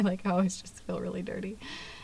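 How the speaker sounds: soft, unvoiced, secretive whisper.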